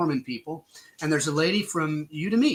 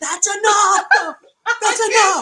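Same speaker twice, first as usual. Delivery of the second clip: put-on woman's scream, higher and louder; 8 dB louder than usual. Retelling how a lady at the party reacted: imitating a woman screaming. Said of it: "she was screaming".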